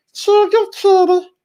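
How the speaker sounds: goofy squeaky voice, very high and silly. Host greeting viewers by name, silly put-on voice. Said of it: "I got to do that voice every time I see that name".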